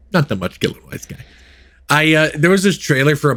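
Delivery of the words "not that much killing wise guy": breathy, barely voiced, whispered tough-guy voice. Showing how to say the line: Robert De Niro impression. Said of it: "The Bobby De Niro face".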